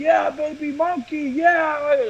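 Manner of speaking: put-on yelling, stretched out. Retelling a night out, imitating someone yelling at the blackjack tables. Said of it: "I hear somebody yelling".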